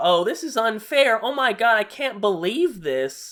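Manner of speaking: put-on whine. Mocking people who complain that things are unfair: mock whining. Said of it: "people like to just sit here nowadays and cry about".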